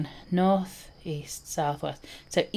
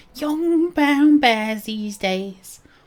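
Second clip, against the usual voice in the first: put-on old lady voice, much higher, louder; 7 semitones higher, 6 dB louder than usual. Repeating a phrase the way an imagined old lady would say it, old lady voice. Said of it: "I should not have done that accent".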